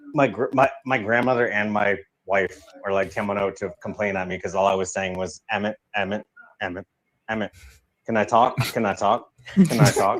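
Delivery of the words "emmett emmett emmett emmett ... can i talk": ordinary delivery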